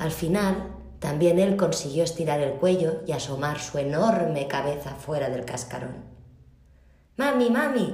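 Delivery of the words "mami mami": shrill, high, squeaky little chick voice. A newly hatched chick calls to its mother, squeaky voice. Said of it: "dijo el extraño pollito con voz chillona".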